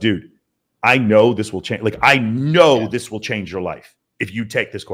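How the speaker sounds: ordinary delivery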